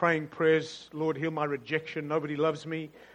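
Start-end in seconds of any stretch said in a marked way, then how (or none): none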